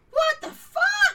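high, loud, slow shocked squawk in fairy voice.

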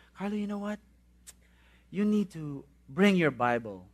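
gentle, really soft, quiet way of talking. Recalling how Kuya Arman would speak to you, imitating his really soft voice. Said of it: "in that really soft voice".

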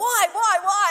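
put-on shrill, high, panicked, frantic shouting. Retelling how she kept driving instead of stopping when told to; retelling a yell.

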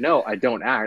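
ordinary delivery

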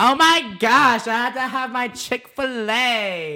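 very high, drawn-out gushing voice.

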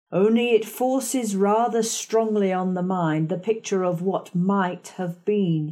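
ordinary delivery, nothing marked

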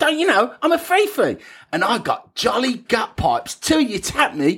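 over-the-top, exaggerated Cockney accent, very high-pitched. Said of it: "was that a British Cockney accent?".

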